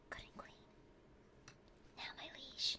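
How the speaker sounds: soft, hushed whisper. Addressing the liege in a knight role-play, whispering. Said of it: "Why am I whispering?".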